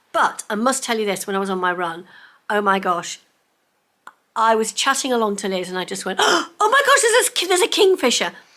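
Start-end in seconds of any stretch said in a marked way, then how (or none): 6.2-8.3 mock very high, loud, swooping excited burst, stumbling. Retelling spotting a kingfisher while running: retelling an excited exclamation. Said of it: "I'm getting so excited".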